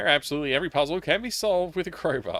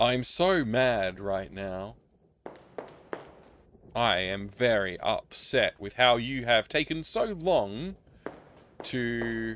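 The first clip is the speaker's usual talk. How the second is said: slow, terribly acted, bad line reading; 4 semitones lower, 3 dB quieter than usual. Mocking the game's voice acting: mocking bad line reading. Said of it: "The way they read the lines is so bad".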